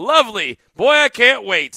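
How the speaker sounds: very high, drawn-out, swooping, fake sarcastic enthusiasm. Reacting to another speaker saying he got six more: sarcastic mock enthusiasm. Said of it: "Can you hear the thrill, the enthusiasm in my voice?".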